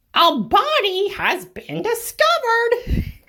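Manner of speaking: very high, very loud, shrill, booming, swooping character voice. After signing off a video, doing a Monokuma impression. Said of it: "That was my Monokuma impression".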